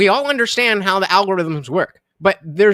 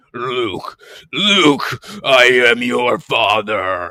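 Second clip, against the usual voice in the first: lowest bass voice, drawn out very slow; 8 semitones lower than usual. Reading a viewer donation request, doing the deepest voice. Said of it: "my deepest voice".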